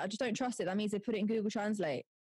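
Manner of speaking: plain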